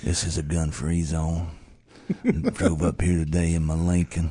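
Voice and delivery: put-on Texan drawl. Joking with co-hosts in a Matthew McConaughey impression. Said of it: "best Matthew McConaughey impression".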